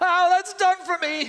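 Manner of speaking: very high, loud, gasped-out words. A ghost reels backward and speaks: gasping. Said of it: "gasped the ghost".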